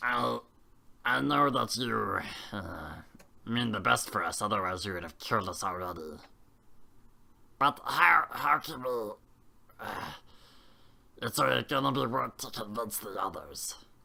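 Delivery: put-on kobold creature voice. Speaking as a character who addresses the others, doing a character's voice. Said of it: "I'm not gonna do the voice for a little bit".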